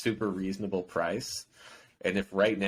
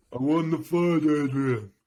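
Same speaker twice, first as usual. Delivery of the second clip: loud, very drawn-out, every word stretched; 7 semitones higher, 7 dB louder than usual. Trading Sylvester Stallone impressions with another speaker: Sylvester Stallone impression. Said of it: "that's good".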